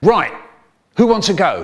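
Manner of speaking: aggressive, bared-teeth snarl. Retelling a fight, the speaker voices the man snarling back. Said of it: "the man snarled back".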